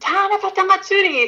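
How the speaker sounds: play-acted, very high, thrilled little-girl scream. Storyteller voices the young girl repeating it after her mom hushes her: screaming. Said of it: "she screams it again".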